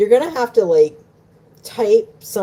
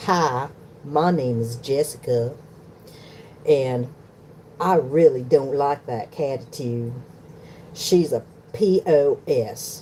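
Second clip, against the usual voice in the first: not-great put-on southern drawl, passable; 3 semitones lower, 4 dB quieter than usual. Speaker tries out a character introducing herself, in a not-great put-on southern accent. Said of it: "I can try the southern accent".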